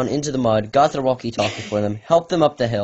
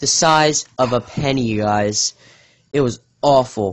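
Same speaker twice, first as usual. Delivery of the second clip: slow, heavy, deliberately overstated sarcasm. Describing a friend's small cut to listeners: sarcastic tone. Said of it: "sense the sarcasm in my voice".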